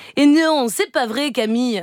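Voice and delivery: put-on voice with a Marseille accent.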